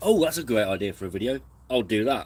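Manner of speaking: wide, loud, sudden burst of excitement.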